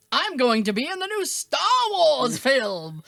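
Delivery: loud, grand, theatrical declamation. Imitating a friend who does voiceover work, in a mock shakespearean voice. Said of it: "very like Shakespearean voice, so he's like".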